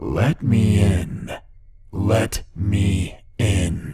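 terrifying, deep, crackly, unearthly inhuman creature voice. A narrator reads the girl's words after the screaming dies: inhuman, terrifying voice. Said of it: "She spoke in the most inhuman, terrifying voice".

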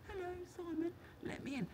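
tiny half-whisper, very high and very soft. Describing a car gadget that lets its owner in, imitating a gadget half-whispering. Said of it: "it spends its whole life just whispering".

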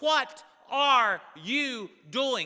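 loud, high-pitched scream, words dragged out. Retelling how a father ran out screaming: imitating father screaming. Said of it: "screaming at the top of his lungs".

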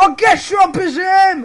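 loud, excited shout. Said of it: "Oh, calme-toi".

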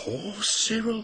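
whispering. Reading a story aloud, Thomas speaks after the Fat Controller's answer: whispered. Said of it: "whispered Thomas".

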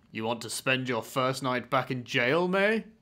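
faintly deepened, mildly stern put-on voice. Asking May about her first night back in jail, put-on deep voice. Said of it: "I was doing a deep voice".

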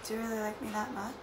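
soft, hushed, prettier voice. Retaking a line after a flubbed first try; prettier voice. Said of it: "I said it in a prettier voice".

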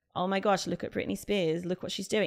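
ordinary talk

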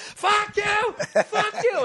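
very high, slow, drawn-out, furious screaming. Retelling a heckler at the stage: imitating a man screaming.

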